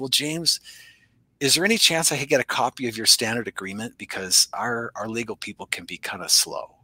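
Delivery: discreet, hushed, confiding voice. Telling a story, quoting what a guy asked him, retelling a lowered voice. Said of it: "he kind of lowers his voice a little bit".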